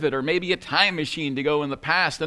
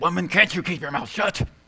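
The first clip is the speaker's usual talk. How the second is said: angry words forced out between clenched teeth. Retelling a man speaking to his wife during a traffic stop, through clenched teeth. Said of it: "through clenched teeth said".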